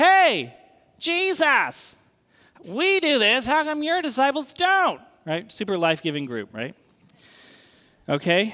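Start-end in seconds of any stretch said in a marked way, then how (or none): 0.0-5.0 put-on, irritated, demanding, annoyed, pitched-up, complaining tone. Retelling the Pharisees' complaint to Jesus: imitating annoyed Pharisees. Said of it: "And so they're ticked".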